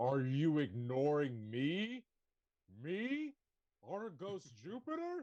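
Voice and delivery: very slow, booming, swooping voice, rising pitch. A character magically makes his voice boom at others, booming voice. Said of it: "make his voice boom up to three times as loud".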